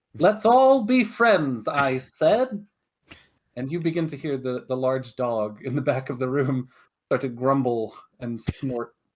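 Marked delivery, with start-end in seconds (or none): 0.2-2.7 yelly, full-on shouting, high and loud. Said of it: "getting a little bit more yelly".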